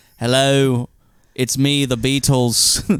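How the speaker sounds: put-on British accent. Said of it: "My mom loves it".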